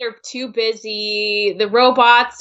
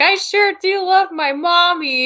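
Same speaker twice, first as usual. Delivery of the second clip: high, slow, slightly creepy voice; 8 semitones higher than usual. Describing a scene where a character imitates another: imitating Dendy's K.O. impression. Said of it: "the way she's talking".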